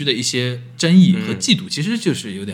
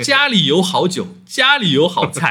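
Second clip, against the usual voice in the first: put-on speaking with a Dongbei accent; 6 semitones higher than usual. Retelling being grabbed while walking: imitating a Northeastern Chinese accent. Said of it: "一听就东北口音".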